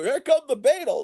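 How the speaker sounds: mock manic, frantic DJ shout, very high-pitched. Describing how old radio DJs delivered their lines: imitating a shouting radio DJ. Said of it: "it's like they're shouting at you".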